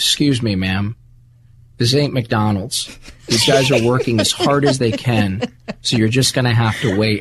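unhurried, smooth, calm, cool, sexy tone. Retell David Duchovny answering a constantly complaining customer in David Duchovny's calm, cool, sexy voice. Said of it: "this calm cool like sexy voice".

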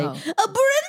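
very high, silly, goofy put-on voice. Homeschooling mom showing how she says a name in class, in a goofy voice. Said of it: "I have to do it in a goofy voice".

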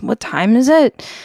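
sleepy mumble. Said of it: "he sort of mumbled".

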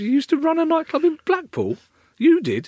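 very high, loud, swooping incredulous tone, up an octave. Learning the other speaker once ran a blackpool nightclub, voice up an octave. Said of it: "The voice went up an octave".

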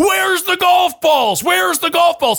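very high, frantic repeated screaming. Retelling stepping outside to look for golf balls: imitating own screaming. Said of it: "and now I'm screaming".

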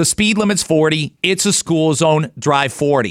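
ordinary talk

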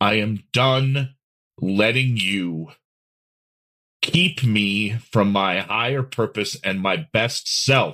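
angry, protective tone. Telling the weight of depression to leave: speaking from protective anger. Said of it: "if that anger of protection could speak".

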